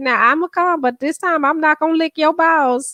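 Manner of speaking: put-on young girl voice. Retelling a TikTok, imitating the girl asking for money: imitating a girl. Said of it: "She said".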